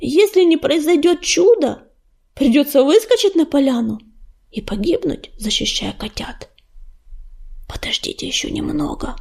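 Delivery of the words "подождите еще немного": whispering, quieter. Hiding in the reeds near a clearing, whispered. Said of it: "прошептал он".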